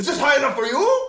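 acted angry outburst, shrill, loud, pitched way up. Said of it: "had, like, a freak out".

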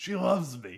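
offhand, shrugging tone. Retelling a scene where a man replies to a driver, retelling a shrugging reply. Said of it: "shrugging way".

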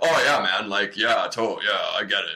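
butch straight-guy voice. Mirroring the straight men who come up to talk, in a butch straight-guy voice. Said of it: "That voice is also how I imitate my brother".

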